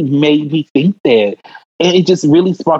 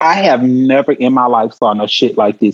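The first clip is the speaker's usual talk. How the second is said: normal talking voice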